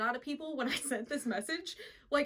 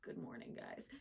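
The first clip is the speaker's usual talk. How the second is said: whispered, deep, just-woken morning voice. Retelling how Cameron greeted everyone on waking up: imitating Cameron's deep morning voice. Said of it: "his voice is so deep in the morning".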